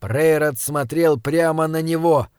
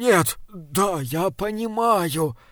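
faltering, halting, stammering, tripping over words; 3 semitones higher, 4 dB quieter than usual. A priest answers a dark figure's pressing questions, stammering. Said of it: "запинаясь".

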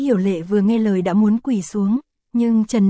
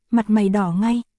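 plain

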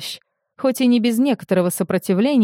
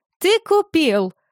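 exclaimed high with sincere joy; 9 semitones higher than usual. Narrator reading Sarita greeting Tarius at the door, exclaiming with sincere joy. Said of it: "воскликнула она с искренней радостью".

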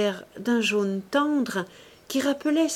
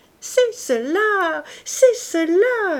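very slow, high, loud delighted outcry, cela drawn out; 8 semitones higher, 6 dB louder than usual. A woman, clapping her hands, recognizes the described necklace; crying out.

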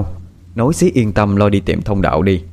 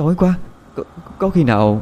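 quavering, shaky, trembling voice, pitched up; 8 semitones higher than usual. Narrator reading a character's line as three people go down a dark passage, trembling voice. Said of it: "nói với giọng run run".

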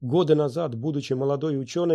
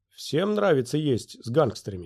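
ordinary delivery, nothing marked

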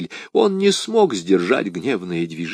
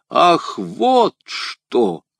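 mocking, scornful tone, slightly raised pitch; 5 semitones higher than usual. The narrator's enemy answers her threat to expose him: mocking. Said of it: "насмешливо произнес мой враг".

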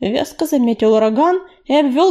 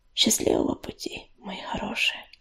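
gentle, soft, tender hushed whisper; 2 semitones lower, 11 dB quieter than usual. A stray cat turns to the children just before leaving them, whispering. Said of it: "шепнула она".

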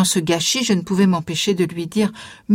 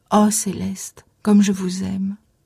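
soft, gentle, tender voice. A man speaks to Céleste as she gets back up, gently and tenderly. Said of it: "je l'entendrai toujours du fond de sa douceur".

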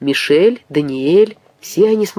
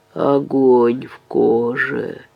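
low groaning moan, "коже" stretched out; 4 semitones lower than usual. A sick man repeats his words to a doubting visitor, moaning. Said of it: "простонал Мотен".

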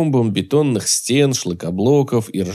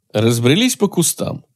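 usual speaking voice

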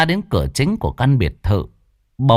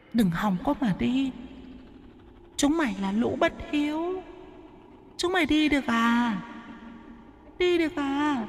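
put-on piercing, shrill, very high demon girl voice; 12 semitones higher, 11 dB quieter than usual. Narrating a horror story, the reader voices the female demon, shrill demon girl voice. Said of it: "Tiếng con quỷ gái giọng the thé".

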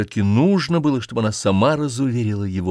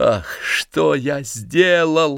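very slow, regretful, remorseful outcry; 4 semitones higher than usual. After a woman begins to cry, a man speaks, crying out. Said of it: "вскрикнул он".

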